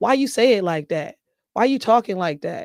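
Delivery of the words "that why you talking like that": ordinary talk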